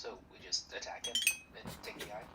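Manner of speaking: very quiet, hushed whisper. In a scene, a character announces they'll whisper, then speaks: whispering. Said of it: "I'm gonna whisper".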